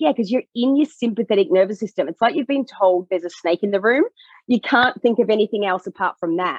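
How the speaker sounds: plain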